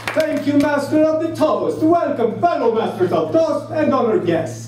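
put-on Italian accent. Opening a speech to fellow Masters of Toast in a fake Italian accent. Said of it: "I just opened this speech using a fake Italian accent".

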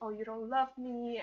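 mock sulky, pouty, cranky and angry. Retelling a folktale where she reproaches the prince: imitating a pouty angry complaint. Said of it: "she was just all, like, pouty and really".

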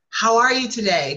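upbeat, bright smiling voice, lifting up. Demonstrating how to greet someone on a sales call, in a smiling voice. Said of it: "you can't smile and not just go up".

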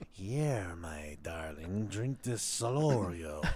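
very low, soft, hushed witch voice. Joking that a name sounds like a witch's bottled brew, witch voice. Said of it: "some shit that a witch would put in a bottle".

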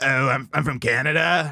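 low, slow, raspy, scratchy generic guy voice. Trying a first impression of the other speaker, Ryan Long impression. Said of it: "Let me try and do a Ryan Long impression".

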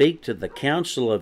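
ordinary delivery, nothing marked

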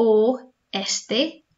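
oeste sounded out carefully and slowly. Demonstrating how a spanish word sounds when said slowly: said slowly. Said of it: "So when you say this slowly".

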